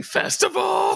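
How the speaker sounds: put-on scream. Retelling how townsfolk scream one word: imitating people screaming. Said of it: "All these guys screaming".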